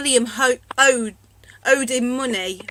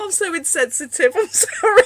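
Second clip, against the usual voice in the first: laughing through words, high and slow; 6 semitones higher than usual. Apologizing after laughing when someone is being sick: laughing while talking. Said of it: "Sorry, I'm laughing".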